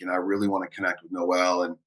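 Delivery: ordinary delivery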